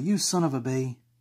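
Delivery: high, feminine-sounding delivery. The speaker demonstrates how people say a mild insult, in a feminine delivery. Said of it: "they don't do it feminine like how I did it".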